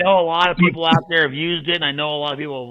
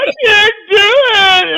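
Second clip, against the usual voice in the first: mock bawling, higher and louder; 10 dB louder than usual. Retelling how someone cried after dropping off the dog: imitating someone bawling. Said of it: "He was bawling like a baby".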